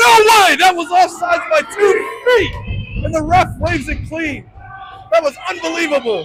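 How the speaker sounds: high, loud scream full of outrage and disbelief. Calling a hockey game, reacting to a missed offsides: screaming in outrage. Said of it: "Sorry for screaming over the mic".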